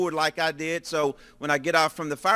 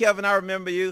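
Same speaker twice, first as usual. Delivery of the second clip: ordinary delivery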